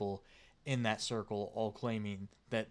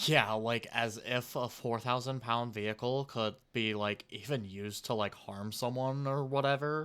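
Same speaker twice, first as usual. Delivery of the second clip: normal talking voice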